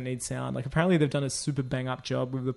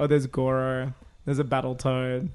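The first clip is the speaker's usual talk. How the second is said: plain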